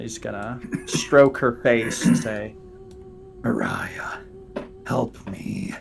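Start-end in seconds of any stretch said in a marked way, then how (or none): 3.4-5.7 soft, panicked whisper. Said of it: "In a sort of a panicked, whispered tone".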